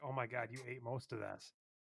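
mock disgusted voice. Retelling the waitress's reaction when she came back for the plates, mimicking her disgust. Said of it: "the disgust in her voice was like".

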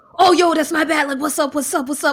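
high-pitched, mock-urgent, frantic-sounding voice. Retelling a callback three hours later: imitating Chris sounding urgent. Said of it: "she'll sound urgent".

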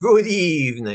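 badly done put-on vampire count voice. Showing their admittedly not very good best impression: Dracula voice. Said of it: "best Dracula voice".

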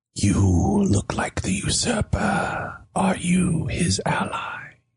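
faint, airy, breathy whispered voice. The game master voices a mysterious voice heard on the wind, whispering. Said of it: "as if it's a whisper on the wind".

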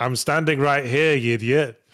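put-on irritated dragon voice. Acting out the game's dragon summoned while standing nearby: imitating an annoyed dragon. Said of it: "he'd get increasingly annoyed".

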